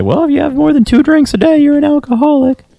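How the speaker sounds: squeaky high-pitched doctor voice. Quoting what doctors say about drinking: high-pitched doctor voice. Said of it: "Something about doctors that gives them high voices".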